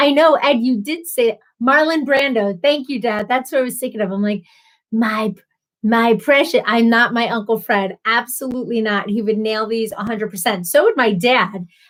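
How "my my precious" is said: really creepy voice. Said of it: "This really creepy voice".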